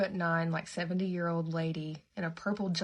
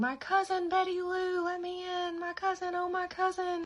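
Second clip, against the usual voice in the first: put-on very high, slow, sobbing crying scream; 13 semitones higher than usual. Retelling a friend's story of a woman at the door, imitating Irma Jean screaming, crying. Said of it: "Irma Jean screaming, crying, saying".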